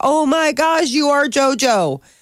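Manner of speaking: put-on very slow, high, drawn-out starstruck little girl voice. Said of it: "the little girl's, like, totally tripping".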